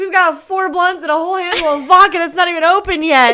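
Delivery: high, loud, rushed, laughing and incredulous.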